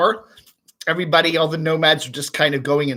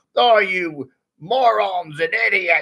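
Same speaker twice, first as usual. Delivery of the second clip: put-on Australian accent; 3 semitones higher than usual. Doing an impression of Billy from Australia, a viewer: imitating Billy. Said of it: "impersonation of you, Billy".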